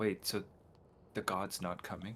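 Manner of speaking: secretive, hushed half-whisper. Voicing a character half-whispering to another in a dark tunnel: half-whispering. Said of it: "whispers to Luna and says".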